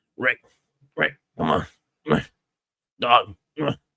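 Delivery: put-on voice, grunting the ughs. Describing a toy photo, doing a Daryl Dixon impression. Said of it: "my Daryl impression".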